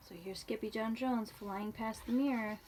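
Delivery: ordinary delivery, nothing marked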